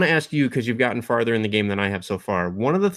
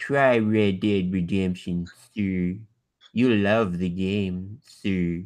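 glum, sad-sack cartoon hound voice; 3 semitones lower than usual. Demonstrating voices for a Western-type character, the speaker does a Droopy Dog voice. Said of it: "voice would be Droopy Dog".

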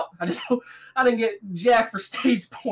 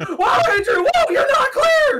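mock shrill, high, climbing, rising scream; 5 dB louder than usual. Retelling a near wreck on track: imitating own past screaming. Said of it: "I was screaming".

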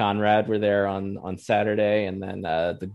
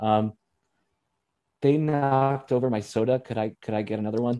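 acted-out sheepish tone, higher pitched; 3 semitones higher than usual. Retelling a man at the table asking a passing waiter, imitating a sheepish request. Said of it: "sort of sheepishly went".

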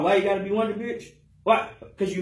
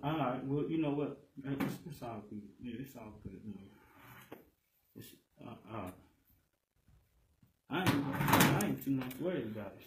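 very hushed voice, on the verge of crying; 5 semitones lower, 11 dB quieter than usual. After his ring is refused, he speaks: about to cry. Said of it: "You about to cry?".

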